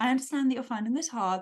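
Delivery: quick, kind, compassionate, understanding voice. Speaker demonstrating one of the voices they use: a compassionate, understanding voice. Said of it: "that kind of voice".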